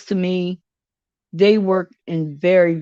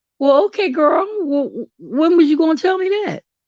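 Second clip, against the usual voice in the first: pitched-up incredulous voice. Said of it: "I'm like".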